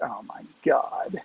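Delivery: quiet muttering under breath. Retelling reactions to a preacher's sermon: muttering under breath. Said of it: "under my breath".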